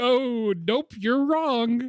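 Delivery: mock half-hearted, unconvincing, very high, very slow. Imitating a character's weak denial: imitating Bilbo unconvincingly. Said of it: "But not very convincingly".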